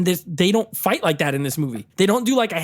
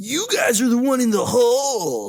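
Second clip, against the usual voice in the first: higher put-on surfer-dude voice; 5 semitones higher than usual. Retelling a bad movie line, imitating surfer Yamcha voice.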